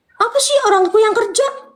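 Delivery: high, mocking, angry voice.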